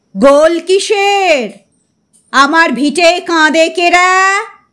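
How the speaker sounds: slow, booming, thundering roar. Reading a story: the holy man hears the uproar, stands, and speaks with a thundering roar. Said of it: "স্বর্গত [name] Haldar ছিলেন গম্ভীর প্রকৃতির তান্ত্রিক। / বাবাজি যখন হুঙ্কার দিতেন, তখন মনে হতো বাজ পড়ার শব্দ হলো। / শোরগোল শুনে উঠে দাঁড়ালেন। / স্বর্গত [name] হালদার ছিলেন গম্ভীর প্রকৃতির তান্ত্রিক।".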